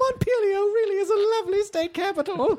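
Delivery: put-on very high little old lady voice. Imitating a friend, covering up when questioned: Emily as an old lady. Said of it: "I've turned her into an old lady now".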